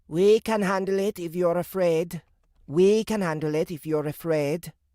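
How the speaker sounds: put-on Cuban accent. Reading a character's line aloud in a story: Cuban accent. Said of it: "Someone gave me some Cuban accent tips".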